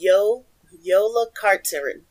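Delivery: slow, deliberate, careful pronunciation of a name. Teaching a learned pronunciation, saying yola carterin slowly and carefully. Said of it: "I'm going to say it slowly".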